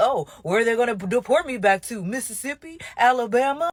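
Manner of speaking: facetious, flippant, smug, mocking put-on voice. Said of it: "people facetiously saying".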